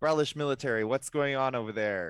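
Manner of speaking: very loud, booming holler, as across a long distance. A player's character calls out to people roughing someone up in an alley, very loudly. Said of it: "I'm just gonna very loudly be like".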